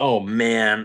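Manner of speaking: ordinary delivery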